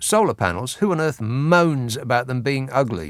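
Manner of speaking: plain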